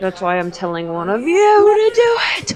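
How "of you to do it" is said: loud yell with rising pitch. Urging the other players to break the bottle: yelling. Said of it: "Anybody in particular you're yelling at?".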